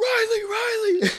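high, wild screaming voice. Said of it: "Stafford just running down that field, screaming".

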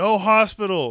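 sudden, bold, high-pitched, loud shout. Retelling the story of popping their knee back in, retelling own yell. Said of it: "I just yell".

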